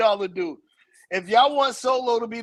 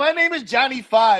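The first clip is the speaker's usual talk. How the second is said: put-on robot voice; 3 semitones higher, 3 dB louder than usual. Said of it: "You talk like a robot".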